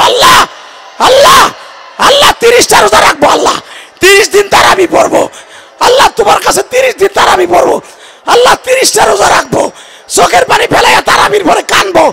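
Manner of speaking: weeping, calling out. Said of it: "ডাক দিয়ে বলো".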